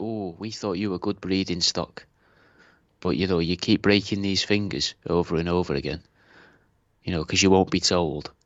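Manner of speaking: mock dark, sinister, menacing put-on tone. Acting out what they might say to someone: imitating a sinister voice. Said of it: "You sounded very sinister when you said that".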